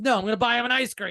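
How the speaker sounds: high, heavily sarcastic, plainly insincere, acted out. Retelling how a humiliated guy answers his girlfriend, imitating a sarcastic reply. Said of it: "So sarcastic".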